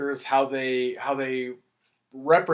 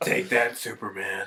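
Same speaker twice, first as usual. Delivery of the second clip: superhero voice, much lower pitch; 6 semitones lower than usual. Retelling Batman narrating the opening credits, doing a Lego Batman impression. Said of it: "He goes a little deeper than that".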